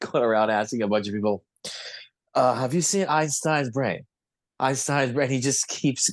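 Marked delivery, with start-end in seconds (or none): 2.5-5.3 funny, put-on Japanese accent. Retelling a documentary man asking people about Einstein's brain: funny Japanese accent. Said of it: "this really funny Japanese accent".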